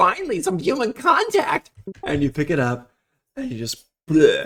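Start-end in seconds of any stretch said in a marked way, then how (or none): 0.0-1.7 tiny, very high talking-hamster voice. Telling a bit about grabbing a talking hamster, voicing it in a talking hamster voice. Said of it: "It's like".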